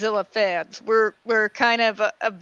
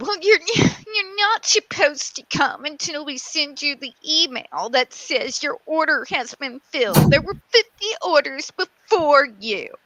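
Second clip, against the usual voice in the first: high, grouchy woman's lecturing tone; 5 semitones higher than usual. Retelling what a grouchy lady told the speaker about an order: imitating a grouchy lady. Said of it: "I had one really grouchy lady".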